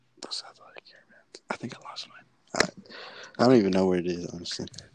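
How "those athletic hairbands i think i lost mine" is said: soft, whispered aside. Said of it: "Why do you whisper?".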